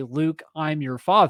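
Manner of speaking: ordinary talk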